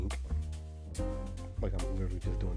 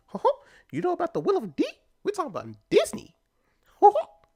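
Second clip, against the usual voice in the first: mock cartoon mouse impression; 8 dB louder than usual. Joking about Mickey talking about the Will of D: Mickey Mouse voice. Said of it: "I just like doing the Mickey laugh".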